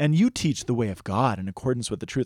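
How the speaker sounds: false, mocking, sarcastic tone. Retelling people buttering someone up, imitating mocking, sarcastic flattery. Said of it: "I have to say it in that voice because they're saying it out of mockery".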